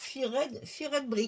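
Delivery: playful, mock put-on English accent.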